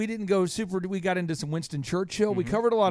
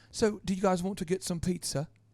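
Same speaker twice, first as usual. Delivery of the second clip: put-on British accent; 4 dB quieter than usual. Retelling how a friend asks about pizza: Andy's British accent. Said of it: "But then he has the British accent".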